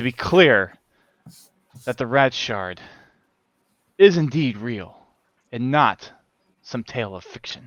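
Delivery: very slow, drawn-out speech. Voicing a mysterious figure telling the party of a quest: speaking very slowly. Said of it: "he's just speaking so slow".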